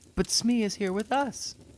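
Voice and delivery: very high, exclaimed outcry of protest. Narrator reading a first-person story, answering during a party game: crying out. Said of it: "I cried".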